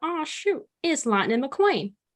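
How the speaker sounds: heavily laid-on, put-on country accent. Coaching someone trying to add country to an accent, the speaker does a Larry the Cable Guy voice. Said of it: "if I can get it started from Larry the Cable Guy in Cars".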